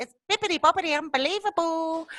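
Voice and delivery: very high, storybook princess voice. Describing a woman who learnt English from Disney movies, in a Disney princess voice. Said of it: "she speaks like a Disney princess".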